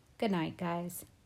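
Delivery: ordinary delivery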